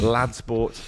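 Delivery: plain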